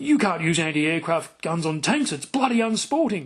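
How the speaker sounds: put-on incredulous, disbelieving, very clipped British accent. Retelling what a man said when taken to meet someone, mock-incredulous clipped British accent. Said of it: "in this incredulous, very clipped British accent".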